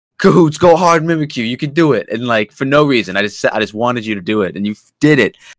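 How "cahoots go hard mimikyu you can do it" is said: put-on, all-out, high-pitched encouraging scream. Retelling cheering on mimikyu during the match: imitating own screaming. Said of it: "when I tell you I was screaming".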